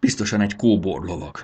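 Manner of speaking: ordinary delivery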